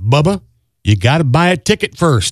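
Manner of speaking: loud voice from above. Telling a lottery joke, voicing the answer from above: loud heavenly voice. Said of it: "a loud heavenly voice was heard saying".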